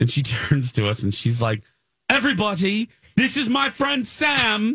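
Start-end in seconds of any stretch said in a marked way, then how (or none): 2.1-4.8 bad fake British accent, pitched high. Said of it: "in her fake British accent".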